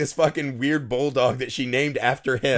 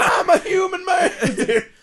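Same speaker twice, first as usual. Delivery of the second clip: mock scream, higher; 3 dB louder than usual. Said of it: "he's just screaming to the gods".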